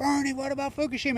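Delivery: put-on high, screamed calling out. Retelling shouting at a political rally all day, retelling a scream. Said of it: "And I'm screaming".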